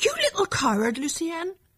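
crying out, very high-pitched exclamation. Marie confronts her brother Lucienne in front of their mother, exclaiming. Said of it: "she exclaimed".

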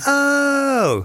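impressed high oh. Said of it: "He went".

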